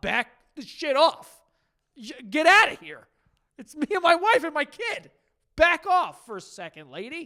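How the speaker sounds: loud, furious, fed-up anger. Imagining telling off a pushy mother-in-law, acting out an angry telling-off. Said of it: "I would be very pissed off about this".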